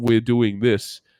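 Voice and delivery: level, lifeless, uninflected monotone drone. Complaining that Dan bores everyone with monotone voices; imitating Dan's monotone voice. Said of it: "monotone voices going".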